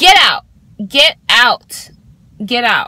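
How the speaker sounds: play-acted, loud, furious, repeated angry shout. Retelling yelling at a man the speaker had let in, retelling a yell. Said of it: "So I just yelled at him".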